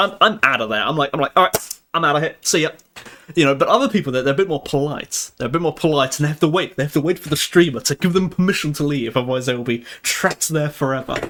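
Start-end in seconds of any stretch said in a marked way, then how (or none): 1.3-2.7 put-on abrupt, rude tone. Retelling how they leave after a raid: imitating a rude goodbye. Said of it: "I'm a very rude and mean person".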